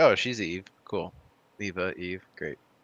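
ordinary delivery

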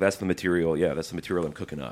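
mock dead-serious deadpan delivery. Retelling what a funny podcaster said, imitating dead-serious delivery. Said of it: "He was being dead serious".

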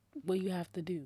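plain

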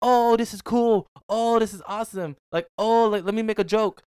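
very high, slow American tourist voice. Retelling a waitress doing an impression of americans: retelling an impression of americans. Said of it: "Can I do an impression of you?".

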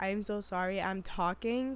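ordinary talk, nothing marked

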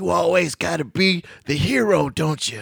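rough, creaky, rasping character voice. Retelling a movie scene, quoting the wife: Weezy Jefferson voice. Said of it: "You sound just like Weezy".

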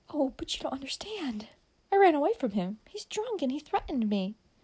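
high, swooping, worked-up, excited tone. Amy answers Dick about the man standing by the light, excited. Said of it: "answered Amy excitedly".

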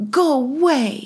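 put-on very high, strong, mean toddler voice, drawn out. Speaker retells a two-year-old girl's reply, imitating a mean two-year-old. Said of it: "in her really strong, mean 2-year-old face".

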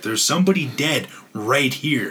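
mock insistent, urgent, mildly belted cry. Retelling what a woman shouted at a man ordering her away, imitating her belting it out. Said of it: "she's literally just belting this out".

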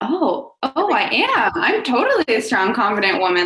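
high, thrilled, delighted voice.

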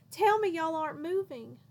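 loud, high-pitched bellowing. Katie pushes back from the dinner table toward her parents, bellowing. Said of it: "she bellowed".

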